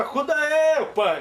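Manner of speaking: very high, loud yell. Retelling how a boy being beaten shouted to his father: imitating someone shouting for help. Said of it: "ele gritava".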